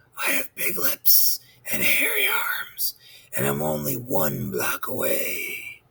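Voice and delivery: low, deep, raspy, hushed whisper. A caller on the phone replies to Nelson, deep, raspy voice. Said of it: "the same deep, raspy voice replied".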